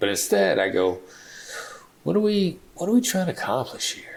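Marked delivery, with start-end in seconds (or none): 2.0-4.2 very high, genuinely curious tone. A speaker showing how they ask a question without accusing, in a curious tone. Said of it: "it's curious".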